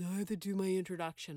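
mock reluctant, eye-rolling complaining tone. Imitating a student who complains about practicing: imitating an eye-rolling student. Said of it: "I get a lot of eyeball rolls".

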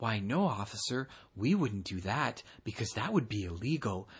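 mock sly, cheeky voice, laid on thick. Retelling a companion's reply to a police officer: imitating Mike's cheeky voice. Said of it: "in his cheekiest voice".

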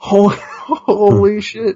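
put-on stressed exclamation. Recounting what he said in his video on seeing the light: retelling own freaked-out exclamation. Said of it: "I'm freaking out in the video".

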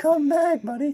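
put-on very high little-kid calling voice. Mocking another speaker's line as a little kid calling his dog back. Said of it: "He sounds like a little kid talking to his dog".

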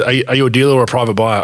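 ordinary talk

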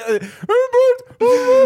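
very high, slow, silly cartoon grandpa voice.

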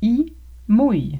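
slow, careful pronunciation of "il mouille". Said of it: "pratiquer votre prononciation et de répéter".

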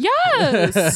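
yes stretched out long on a high pitch. Voicing how a woman would answer a message: Nicole Byer impression. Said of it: "That's a pretty good Nicole Byer impression".

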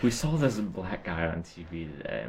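hushed half-whisper under the breath. Telling the others what was seen on TV today, half-whispering. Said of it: "Why'd you whisper like we saw this".

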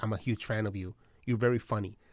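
put-on flat deadpan. Acting out how everyone in the film greets the famous actress, mock-deadpan. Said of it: "everybody's very deadpan about being like".

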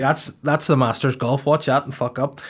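ordinary delivery

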